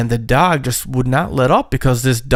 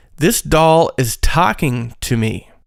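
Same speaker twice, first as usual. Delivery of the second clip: ordinary talk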